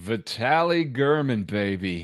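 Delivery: put-on British spy character voice. Naming a player to keep on the squad: sounding like Austin Powers. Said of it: "that sounded like Austin Powers".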